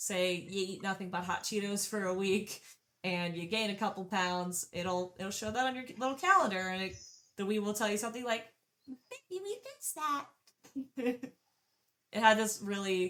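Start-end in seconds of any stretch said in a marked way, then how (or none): 8.9-10.2 very high, tinny machine voice, slow. Describing the Wii's progress calendar, the speaker quotes what the Wii says: tinny high-pitched Wii voice. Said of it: "a really tinny kind of high pitched voice".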